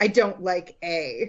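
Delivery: put-on dead-serious voice, very slow and low. Retelling what mom said about the spelling: imitating mom, really serious. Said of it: "really serious".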